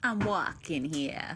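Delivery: New Jersey accent. Performing a line for the others: Jersey accent. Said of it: "So the Jersey accent is the one".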